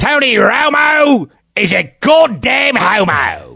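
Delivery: bad put-on Australian accent. Reading out an email as requested, in a bad put-on australian accent. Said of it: "he wants me to do it in Australian accent".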